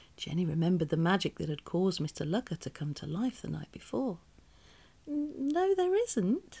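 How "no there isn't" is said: very high-pitched, anxious, nervous voice. Jenny, questioned by Miss Itch about magic in the house, gives a nervous reply. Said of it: "she replied nervously".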